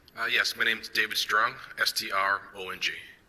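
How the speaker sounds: ordinary talk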